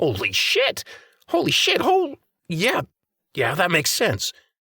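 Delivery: very high-pitched, swooping sound of dawning realization. Narrator reads a man's reaction as fresh information floods his brain; voice pitched higher. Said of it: "His deep voice pitched higher".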